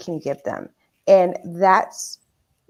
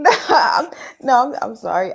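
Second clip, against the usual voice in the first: pitched-up voice, words tumbling out through laughter; 5 semitones higher, 3 dB louder than usual. Apologizing to the others while laughing before answering: laughing while talking. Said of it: "I'm laughing because".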